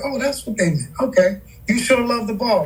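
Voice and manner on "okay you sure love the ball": ordinary talk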